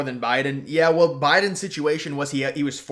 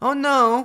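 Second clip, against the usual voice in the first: voice cracking up very high; 10 semitones higher, 4 dB louder than usual. Retelling how Colbert reacted when the crowd laughed: imitating Colbert's voice crack. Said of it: "he almost voice cracked and he was like".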